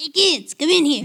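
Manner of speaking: very high, silly, funny, fake put-on voice. Calling the kids in after being asked to do it: funny put-on voice. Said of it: "let Alexa do it with her funny voice".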